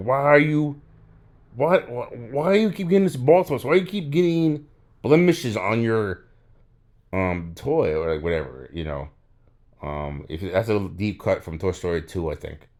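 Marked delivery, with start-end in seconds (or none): 0.0-7.9 mock very high, loud, gritted-teeth frustration. Voicing an imagined toy repairer losing his mind, imitating someone gritting their teeth. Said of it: "gritting his teeth".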